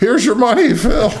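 play-acted, quavering, very high-pitched shaky voice. Retelling being paid backstage by John, imitating John's shaky voice. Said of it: "paid me with a shaky voice saying".

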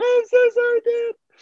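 fake blubbering and sobbing, very high-pitched voice. Imagining being caught by dad after sneaking out: mock crying. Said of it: "I'll be crying already".

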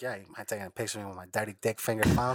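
mock whispering. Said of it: "he fucking whispered that shit in my ear".

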